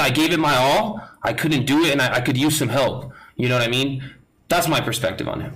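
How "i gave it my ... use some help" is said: ordinary delivery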